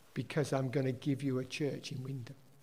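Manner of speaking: very quiet, soft, simple half-whisper. Retelling what was heard in answer to a question: retelling a half-whisper. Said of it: "God just whispered".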